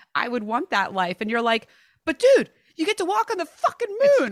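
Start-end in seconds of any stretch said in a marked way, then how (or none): 2.1-4.3 shrill, loud, very high-pitched scream. Quoting the listener's reaction to a guest, retelling a scream. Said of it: "you could tell you were like screaming at him".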